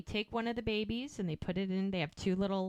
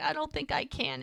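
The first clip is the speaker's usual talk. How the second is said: mock crying through the words, high and tearful; 7 semitones higher than usual. Retelling a birth scene, a mother speaking: imitating someone crying. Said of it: "as she cries".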